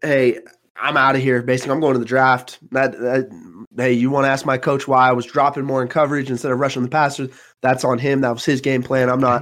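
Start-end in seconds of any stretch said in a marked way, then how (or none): none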